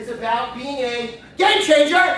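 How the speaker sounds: emphatic, high, loud, slow catchphrase-style call.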